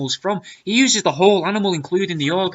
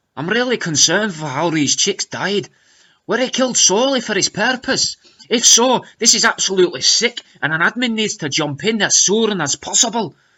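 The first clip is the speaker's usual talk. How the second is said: fake, put-on Scottish accent. Reading out a comment from Abby, Abby's fake Scottish accent. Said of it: "says Abby in a fake Scottish accent".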